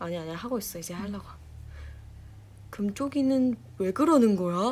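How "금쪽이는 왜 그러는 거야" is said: probing, inquisitive, TV-style manner. Showing off an impression of 금쪽이, copying 금쪽이's way of talking. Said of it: "나 금쪽이 그거 성대모사 진짜 잘해 ... 말투가 비슷해 이게".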